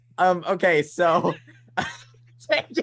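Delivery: giggling, very drawn-out words. Trying to answer a question while losing it: laughing while talking. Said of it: "why am I laughing?".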